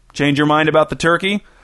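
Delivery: ordinary delivery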